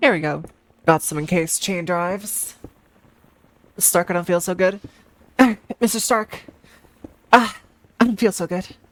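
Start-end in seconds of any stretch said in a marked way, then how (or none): 3.8-8.7 acted voice of a dying hero. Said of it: "I don't know why I said it like that".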